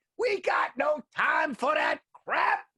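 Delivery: shrill, very high, drawn-out scream, acted out. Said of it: "Just people screaming like that".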